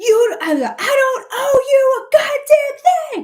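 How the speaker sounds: shrill, very slowly stretched, very high, loud screaming. Retelling a concert where she was really screaming: imitating her own screaming. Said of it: "screaming, like".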